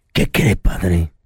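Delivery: very low, deep, hyper-manly macho voice. Retelling how someone spoke to the father, in a very manly voice. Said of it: "le habló muy varonil".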